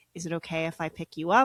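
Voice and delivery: put-on whispering voice. Retelling how someone asked to pick them up: imitating someone whispering. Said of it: "Someone whispers".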